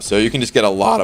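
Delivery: voice cracking mid-sentence. Explaining a character's poison synergy to viewers, with a voice crack. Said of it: "That was a voice crack and a half".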